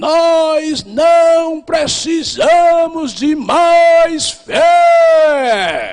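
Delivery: put-on drawn-out northeastern Brazilian accent, very slow. Recalling what the pastor once said from this pulpit: Jabes Nogueira's northeastern accent. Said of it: "naquele sotaque nordestino dele".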